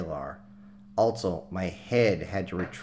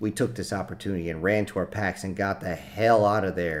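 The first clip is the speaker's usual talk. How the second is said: plain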